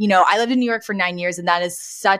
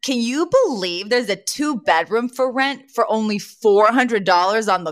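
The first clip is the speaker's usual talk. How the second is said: normal talking voice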